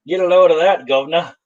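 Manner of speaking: fake, put-on British accent. Pitching a Wolverine for 150 to buyers, slipping into a put-on British accent. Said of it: "You jumped to British".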